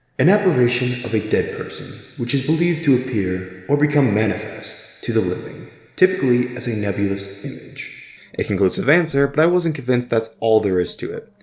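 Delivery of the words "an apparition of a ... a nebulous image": haunting, spooky, eerie ghost-story narration voice. Reading the Google definition of a ghost in a spooky voice. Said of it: "cue the spooky voice".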